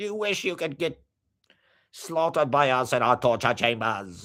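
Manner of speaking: put-on crass Australian TV host. Mimicking an Australian TV host of crass wealth, put-on Australian accent. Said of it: "Australian accent is the sound of crass ultra wealth".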